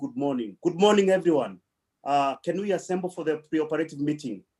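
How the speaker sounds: very authoritative, assertive, take-charge tone. Retelling greeting the assembled people before surgery: retelling an authoritative voice. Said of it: "with a very authorita-, authoritative voice".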